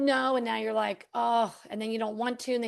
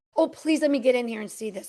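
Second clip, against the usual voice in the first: mock begging, put-on pleading tone. Acting out someone begging for a time slot: mock begging. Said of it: "And you're begging for a time slot".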